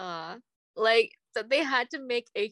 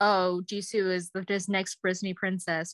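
normal talking voice

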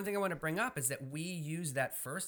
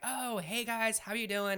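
bubbly, peppy, pitched up; 7 semitones higher than usual. Retelling a newcomer's greeting at a couples' gathering: imitating a bubbly, spunky girl. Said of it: "she's real bubbly, and she's real spunky".

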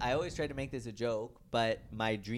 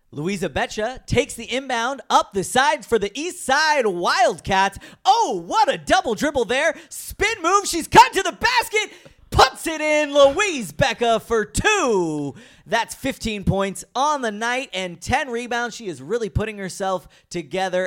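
very loud, high sports announcer play-by-play call; 12 semitones higher, 16 dB louder than usual. A former high school announcer is asked to call the other speaker as point guard: sports announcer play-by-play. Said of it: "Can you try to announce me as a point guard".

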